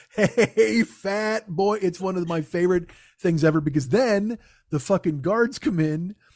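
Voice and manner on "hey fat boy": mock yelling, as loud as possible, pitched high. Retelling a tv scene where he can't stay quiet anymore, imitating a full-volume shout. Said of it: "at the top of his lungs".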